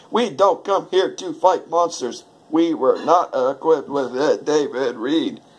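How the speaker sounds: choppy, skipping, stuttering like a defective disc. Showing how a defective DVD set plays a movie line, stuttering, skipping speech. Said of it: "it talks and stutters and talks like this".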